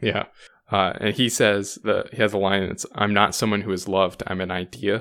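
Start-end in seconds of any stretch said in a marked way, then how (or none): none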